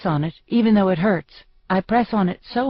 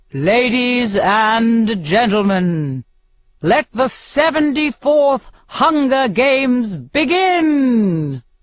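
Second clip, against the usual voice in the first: grand booming arena announcer voice, "and" drawn out; 4 semitones higher, 4 dB louder than usual. A narrator reads the announcer opening the games, in a booming Claudius Templesmith voice. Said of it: "his voice booms all around me".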